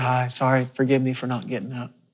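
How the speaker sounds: acted whispering voice. Retelling how a frail woman on oxygen greeted visitors: imitating a whisper. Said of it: "She just sort of whispered".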